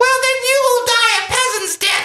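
very high, loud, squeaky high-pitched voice. Imitating an actor on set saying a villain line: imitating a high-pitched voice. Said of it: "in a really high-pitched voice".

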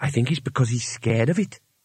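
quiet, soft, hushed. Bethan explains her guess to Twoflower, quietly. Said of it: "said Bethan quietly".

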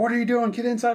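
very high, shrill, loud scolding yell. Retelling being caught coming home late: imitating dad yelling. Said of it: "He starts yelling at me and everything".

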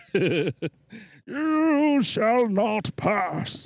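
high-pitched wizard voice, every word drawn out. Saying it can do the voice, then quoting: Gandalf voice. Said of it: "I can do the voice".

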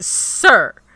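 loud, high, slow, drawn-out, nice but aggressive.

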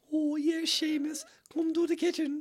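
very high woman's voice. Recapping a movie scene, the Leprechaun mimicking a woman's voice. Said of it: "literally like mimicking her voice".

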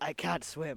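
put-on speaking with Mexican accent. Quoting the guy in the story facing a long swim, doing a Mexican accent. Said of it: "I don't know why I do a Mexican accent".

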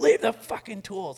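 enraged, shrill, high, loud, furious screaming. Retelling how a man screamed at the speaker over cleaning up tools: retelling a scream. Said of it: "he's like screaming at me at this point".

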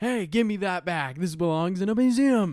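high, very loud, demanding shout. Imagining a twelve-year-old yelling at people, imitating someone yelling. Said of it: "you're literally yelling at people like".

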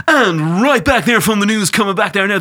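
cheesy radio DJ voice. Imitating the stereotypical way radio DJs talk: radio DJ voice. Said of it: "all radio DJs kind of start talking like that".

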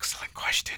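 soft, hushed, barely voiced whisper. Replying to the other speaker's question, whispering. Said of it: "I don't know why I'm whispering".

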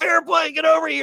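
acted-out yelling. Speaker recounts a wrestling friend calling out to him: retelling a yell.

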